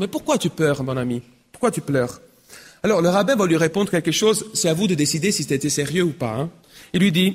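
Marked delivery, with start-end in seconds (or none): none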